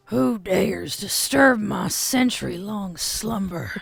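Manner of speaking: voice scraping from the throat. Voicing a character in a roleplay scene, scraping, undead voice. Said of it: "The voice sounds as if it's scraping its way out".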